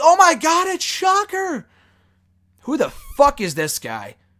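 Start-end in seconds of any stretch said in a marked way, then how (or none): 0.0-1.7 very high, drawn-out, overblown hyped announcer awe. Mocking the commentators playing the reveal up as a huge deal: imitating hyped-up commentators. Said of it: "playing this up as, like, a huge deal".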